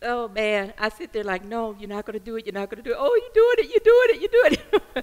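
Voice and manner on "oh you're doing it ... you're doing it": speaking through tears, very high-pitched. A speaker trying to stop crying while still talking: crying while talking. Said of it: "Stop crying".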